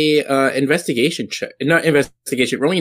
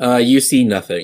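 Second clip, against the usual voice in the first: usual speaking voice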